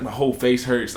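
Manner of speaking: normal talking voice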